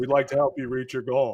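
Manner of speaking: put-on flat deadpan reading. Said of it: "And he just deadpan".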